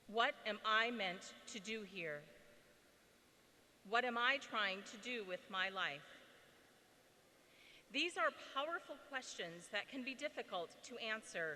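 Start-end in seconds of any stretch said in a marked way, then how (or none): none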